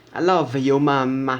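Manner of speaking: loud, angry, insulting-sounding Italian accent. Speaker shows how the Italian accent makes everything sound angry: Italian accent sounding angry. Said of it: "like you still sound like you're insulting your someone".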